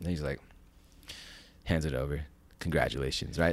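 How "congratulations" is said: mock dead serious, super stern delivery. Retelling how the officer handed the phone back: imitating a stern officer. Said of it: "Still super stern".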